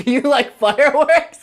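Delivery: loud, slow shout. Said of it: "you shouted".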